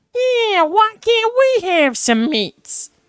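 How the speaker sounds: shrill, loud, high shouted orc voice with British accent. Describing a favorite voice style, trying out the Lord of the Rings orc voice. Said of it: "they always have that um British style".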